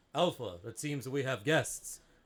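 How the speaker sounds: booming, authoritative, loudspeaker-style voice. Telling a story, voicing an unseen speaker in a command center: booming authoritative voice. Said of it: "booming voice, like like if a loudspeaker had extra bass".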